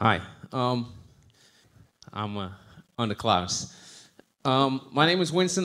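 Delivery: winded, breathless, very slow. Joining the conversation after running up and down stairs to the microphone, out of breath. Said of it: "I might sound a little out of breath".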